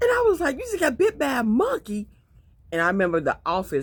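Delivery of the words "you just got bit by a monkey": very high, loud, shrill, incredulous shriek. Retelling hearing over the phone that her husband was bitten: imitating own loud exclaim. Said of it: "I said it so loud".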